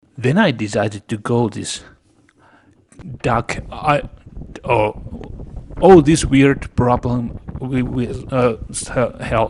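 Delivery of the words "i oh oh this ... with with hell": halting, tripping over the words, stammering over a word. Describing his own pictures and getting stuck on a word: stuttering. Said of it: "I'm stuttering".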